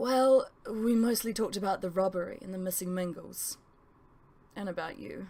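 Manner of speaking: plain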